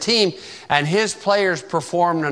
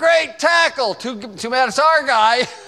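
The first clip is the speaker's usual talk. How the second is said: put-on sarcastic yell, much higher; 8 semitones higher, 3 dB louder than usual. Recalling running the 10-yard markers, the speaker imitates the coach, retelling a sarcastic yell. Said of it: "he would yell out there".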